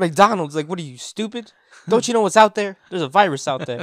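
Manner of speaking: very loud, high-pitched, upset outburst. Retelling own reaction to family going to McDonald's: imitating own upset outburst. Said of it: "I was just so upset".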